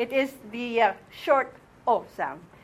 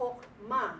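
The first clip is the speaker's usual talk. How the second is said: Chokma, accent on final syllable -ma; 8 dB quieter than usual. Saying the word in class with stress on the last syllable of chokma. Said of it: "The accent is on the last syllable".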